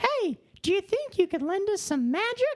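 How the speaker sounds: very high, squeaky, swooping, bouncy cartoon mouse voice. Taking turns doing Mickey voices with a friend: Mickey impression. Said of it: "It got worse".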